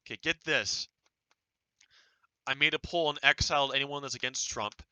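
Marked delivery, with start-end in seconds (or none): none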